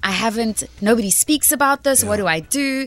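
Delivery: ordinary talk, nothing marked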